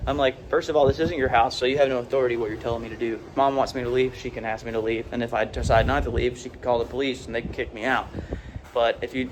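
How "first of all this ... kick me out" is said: plain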